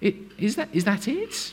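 confused voice. Explaining how people might respond, the speaker demonstrates a confused voice. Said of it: "Best confused voice".

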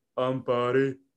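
flat monotone delivery. Retelling a team talk, the speaker quotes Barry McKay introducing himself in a monotone. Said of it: "in a monotone voice".

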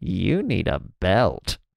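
theatrical whisper. Retelling what a woman half-whispered after pulling up their pants, half-whispered. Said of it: "she's like whispered to me".

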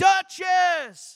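loud, high-pitched yell.

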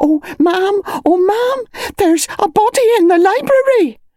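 hysterical, out-of-breath outburst, very high. Someone rushes into a dim bedroom with terrible news: breathless, hysterical. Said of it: "breathless, hysterical".

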